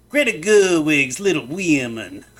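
bad Cajun accent, belted loud and high. Reading out a favorite random tweet, a speaker does a bad Avery Johnson voice, Cajun accent. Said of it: "My Cajun accent is terrible".

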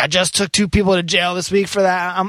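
put-on screaming. Retelling a man threatening to take the speaker to jail, imitating his screaming threat. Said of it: "is like screaming at me".

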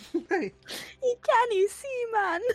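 put-on very high piss-take Geordie accent. Repeating a line from someone's acting to a friend, in a mock Geordie accent. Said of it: "taking the piss out of the Geordie accent itself".

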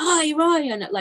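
high, shrill shrieking yell. Recalling calling out a name with a calf in freezing cold: shrill shout of 'ryan'. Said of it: "in this awful shrill voice".

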